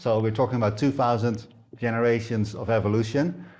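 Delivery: plain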